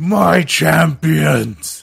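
furious, rasping, very loud angry roar at full volume. Voicing a character who roars in anger as champions fly off: roaring in anger. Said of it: "turns back and roars in anger".

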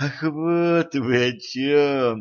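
sighing with relief. An innkeeper answers a guest's demands, sighing with relief. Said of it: "облегченно вздохнул хозяин".

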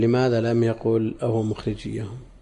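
ordinary talk

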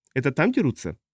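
plain reading voice

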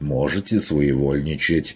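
ordinary delivery

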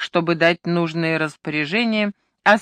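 ordinary delivery

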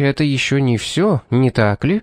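ordinary delivery, nothing marked

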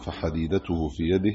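plain

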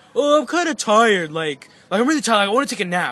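loud, put-on, fake worn-out complaining tone. Retelling how Victor turned down hanging out: imitating Victor, mock tired. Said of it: "he's like".

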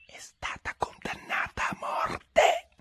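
secret, hushed whisper. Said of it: "avvicinò la bocca all'orecchio di Alice e bisbigliò".

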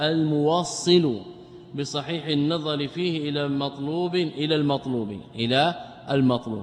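ordinary talk

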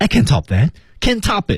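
can't stressed, hit high and hard. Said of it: "这个重音".

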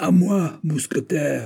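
overpowering giant voice. D'Artagnan calling to the musketeers from a balcony, in a giant's voice. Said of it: "dit-il d'une voix de géant".

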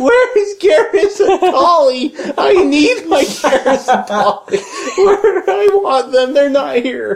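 mock, very high, near-tearful whining complaint. Telling how Jeff reacted when the Lego sets were missing, imitating Jeff whining.

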